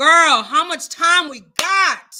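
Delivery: loud, slow, calling-out voice. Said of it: "I'm sorry, I'm so loud".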